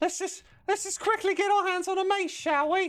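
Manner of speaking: very high-pitched, dopey voice. Picking gear and going for a mace; drugged-up Mickey Mouse voice. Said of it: "I sounded like a drugged up Mickey Mouse".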